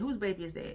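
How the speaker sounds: plain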